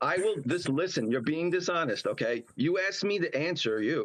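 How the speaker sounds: normal talking voice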